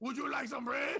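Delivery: worst fake French accent, high-pitched. Telling how they answered everyone the whole time in the worst fake French accent. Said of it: "I would just do the worst French accent the entire time".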